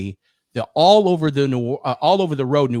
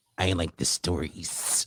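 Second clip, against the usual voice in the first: slow, hushed, breathy, drawn-out whisper; 8 semitones lower, 11 dB quieter than usual. Imitating a guest's words from an earlier episode: imitating Jimmy. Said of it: "I'm gonna try to give it, do it justice".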